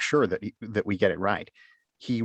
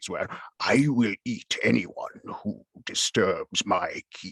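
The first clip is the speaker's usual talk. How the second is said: dragon voice from way down low, deep. A narrator describes the voices done in a recording, then uses a dragon voice. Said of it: "all the way down to dragons".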